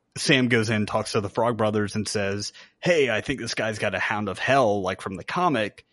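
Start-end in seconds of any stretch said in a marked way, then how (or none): none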